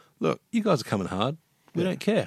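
put-on cool, unbothered tone. Imitating a rival team answering an opponent: imitating a cool, unbothered team. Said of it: "they were just so damn cool about it".

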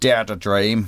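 menacing, threatening-sounding Northern Irish accent. Showing how a slogan sounds said in Northern Irish: threatening Northern Irish accent. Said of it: "if you say it in a Northern Irish accent".

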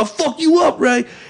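full-on, high-pitched, acted hollered yell. Retelling how a woman's ex-boyfriend reacted on seeing the speaker: imitating a man yelling. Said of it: "he started yelling".

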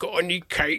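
soft, gummy, toothless army colonel voice. Recalling an army colonel who checked someone's bag, imitating his toothless voice. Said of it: "army colonel who had no teeth".

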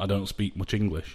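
plain

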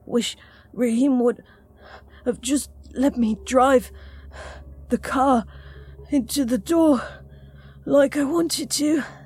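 slow, between deep breaths. [name], tired from getting them inside, answers Valerie; slowly between deep breaths. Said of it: "[name] spoke slowly between deep breaths".

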